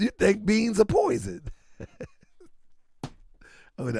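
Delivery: talking through laughter. Reacting to a joke about beans being poison, laughing while talking. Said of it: "let me stop laughing so much".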